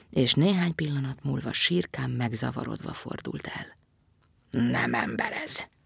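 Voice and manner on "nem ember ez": slower muttering under the breath. The creature turns away bewildered and talks to itself; muttered to himself. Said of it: "dörmögte magában".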